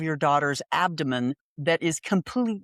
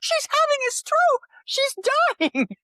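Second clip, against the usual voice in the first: frantic, panicked, alarmed, very high pitch; 4 dB louder than usual. Retelling a daughter's panic when her mom passed out: imitating Julia freaking out. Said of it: "'cause she's freaking out".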